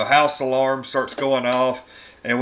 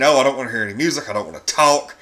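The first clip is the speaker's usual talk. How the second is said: ordinary talk, nothing marked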